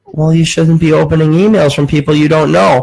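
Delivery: ordinary talk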